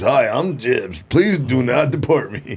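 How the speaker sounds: put-on, polished network news anchor delivery. Speaker mocks an acquaintance who now sounds like a broadcaster: imitating Jibs's broadcaster voice. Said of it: "now he sounds like a broadcaster".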